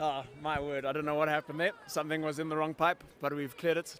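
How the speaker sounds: soft, low voice, still catching breath after choking.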